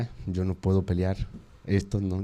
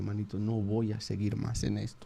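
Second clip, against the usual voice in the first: mock crying, soft and tearful pleading voice; 7 dB quieter than usual. Speaker retells what he told his friend: retelling crying words. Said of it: "Llorando, le dije".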